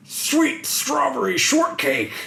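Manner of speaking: very high-pitched, animated cartoon character voice. Quoting a cartoon character's catchphrase, doing a Murray impression.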